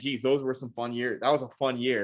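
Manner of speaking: ironic, tongue-in-cheek, dry, sarcastic. Joking about a team's past seasons after another speaker's quip: sarcastic. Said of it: "I'm being sarcastic".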